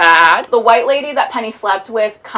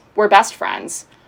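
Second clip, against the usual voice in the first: mock bone-dry, completely emotionless deadpan. Recapping a scene, Elliot answering Margot's tearful question, retelling a complete deadpan. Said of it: "complete deadpan".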